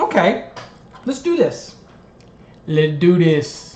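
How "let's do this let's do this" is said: put-on swooping New York accent. Before working an electrical code question, the speaker hypes it up: new york accent impression. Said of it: "That's my best New York impression".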